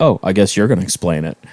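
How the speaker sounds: low muttering under the breath. Retelling what a clerk said to a manager: imitating someone muttering under breath. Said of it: "under her breath is like".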